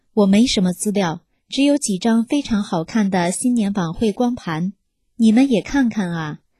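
normal talking voice

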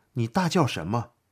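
plain reading voice

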